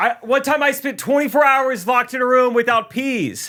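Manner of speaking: very high shouted outburst, acted out. Retelling how a lady yelled during a bit: imitating someone yelling. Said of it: "but she yells".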